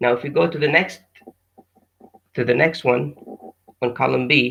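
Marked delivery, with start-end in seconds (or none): none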